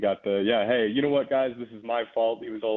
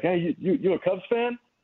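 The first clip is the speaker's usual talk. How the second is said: put-on high, hammered, boozy drunken voice; 9 semitones higher than usual. Retelling a drunk fan approaching him in a bathroom: imitating a drunk fan. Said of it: "he was hammered".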